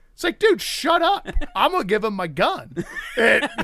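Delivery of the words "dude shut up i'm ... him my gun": put-on swooping, heated yelling. Retelling how another guy yelled at the juggler: imitating someone yelling. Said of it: "the other guy's yelling at our guy".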